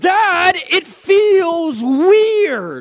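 put-on high, swooping, irritated, complaining young girl voice. Father retelling his daughter complaining to him, imitating his annoyed daughter. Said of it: "but she was mad".

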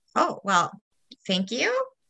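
plain

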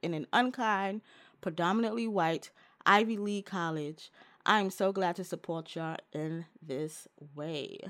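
plain

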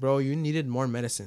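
ordinary talk

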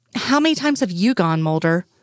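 plain reading voice

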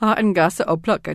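ordinary talk

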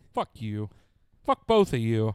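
loud, drawn-out, faked anger and annoyance. Answering friends who tease about the sprayer: mock upset. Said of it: "Why are you so upset?".

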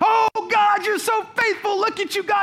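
put-on effusive voice, loud, swelling and building in force. Retelling a woman's reaction in an argument over bread, retelling loud praising. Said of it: "she starts getting louder".

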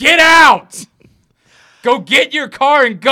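acted, very high, stretched, drawn-out scream. Retelling how someone burst into the show: retelling someone screaming. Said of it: "started screaming in the middle of the show".

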